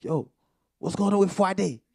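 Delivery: put-on very high, very loud, terrible Haitian accent. Acting out the wife's half-Haitian family calling about Friday, in a terrible Haitian accent. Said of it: "that was a terrible Haitian accent".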